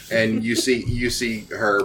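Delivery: ordinary delivery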